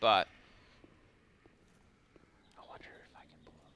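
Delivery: breathy, hushed whisper under the breath. Wondering aloud whether a tough game fight can be pulled off: whispering. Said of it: "I don't know why I'm whispering".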